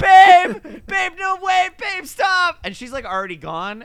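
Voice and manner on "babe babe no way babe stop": very high, loud, drawn-out screaming. Retelling a movie scene where a boyfriend yells after his girlfriend: imitating someone screaming. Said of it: "he's just screaming".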